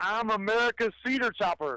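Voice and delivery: loud, high-pitched, all-in enthusiastic delivery. Asked to say it again better, the speaker repeats the line loud and enthusiastic. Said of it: "louder. More enthusiasm".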